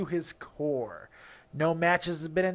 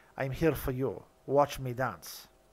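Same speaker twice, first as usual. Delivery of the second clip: put-on low, sultry, seductive, sexy voice; 5 semitones lower, 4 dB quieter than usual. Closing the preview with a put-on sexy voice of [name]. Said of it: "done in the sexy voice of Mister [name]".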